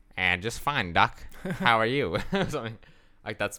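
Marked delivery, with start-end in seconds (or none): 0.2-2.2 loud, raised cartoon rabbit voice. Retelling how a coma patient answered his doctor, in a Bugs Bunny voice. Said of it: "my best Bugs Bunny voice".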